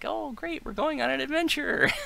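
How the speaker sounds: loud, very high, perky, chirping female voice. Describing the hopeful gem's voice, imitating a perky female voice. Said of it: "like this perky female voice that's like".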